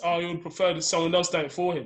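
ordinary talk

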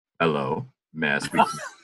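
put-on deep kid voice. Retelling phoning their mother at work as a child, imitating own deep kid voice. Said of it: "I had a deep voice for a kid".

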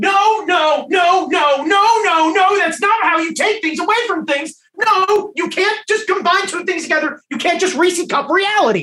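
acted, high, shouted protesting rant. Replaying for listeners what he shouted at his car radio, retelling his shouting.

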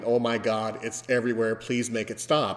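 normal talking voice

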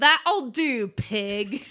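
loud yell projected across a room. Voicing a character who yells out a joke: yelling out. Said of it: "she just yells out".

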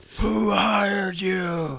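loud, gravelly scream in the gravelliest voice. Screaming at a captive tied to a chair in full Batman mode: gravelly Batman scream. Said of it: "start screaming in the ... most gravelly voice that Kane can muster".

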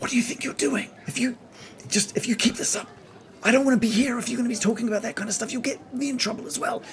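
soft whisper under the breath. Voicing a woman who covers her kid's ears: whispering. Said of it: "sort of just whispers".

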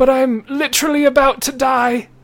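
very high, loud, fast, strained pained voice.

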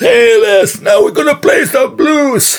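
shrill, very high, loud hollering. Retelling what a woman shouted on stage: imitating a woman shouting. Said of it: "och så skrek hon".

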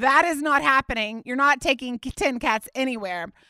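usual speaking voice

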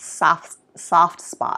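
soft, whispered Boston accent. Naming the beer being tasted: Boston accent. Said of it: "you started to say it like you're from Boston".

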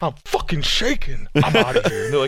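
put-on, mock furious voice of pure anger. Retelling what a man started saying, in mock pure anger. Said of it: "the most fucking pure anger ever".

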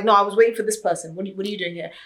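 irate, confrontational, angry outburst. Retelling how a catfished man confronted a woman: imitating an angry man. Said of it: "he literally went off at her".

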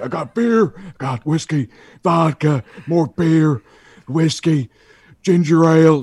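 deliberate drawn-out ranting. Retelling a wrestler's rant about the booze he bought: Stone Cold Steve Austin impression. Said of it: "I like the accent you just did".

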